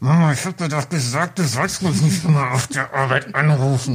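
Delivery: put-on seething anger, forced past clenched teeth. Retelling what a man said to his mother calling him at work, gritted-teeth anger. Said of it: "mit zusammengebissenen Zähnen gesagt".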